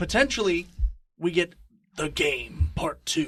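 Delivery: solemn, dead-serious put-on delivery. Introducing a hypothetical playoff matchup, in a serious voice. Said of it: "I had to put on a serious voice for that".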